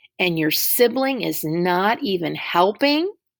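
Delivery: ordinary delivery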